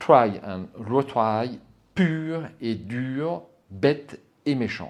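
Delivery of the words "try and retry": English accent, louder and slower. Speaking French, dropping in an English phrase with an English accent. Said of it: "avec mon accent anglais".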